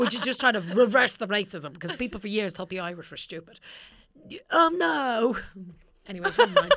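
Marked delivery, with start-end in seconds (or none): 4.5-6.7 fake English accent, sing-song, high and swooping. Working through problems with a partner, slipping into a put-on English accent. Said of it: "Was that your English accent?".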